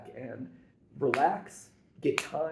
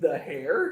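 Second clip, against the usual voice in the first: questioning upward lift at the end of Hair; 2 semitones higher than usual. Mimicking how the other speaker said a title: imitating a rising intonation. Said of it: "add the little intonation up at the end".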